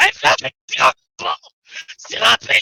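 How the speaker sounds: petulant, very high, rough, creaky tantrum wail. Playing a character who is told they are adorable: in-character temper tantrum. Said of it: "a little temper tantrum inside".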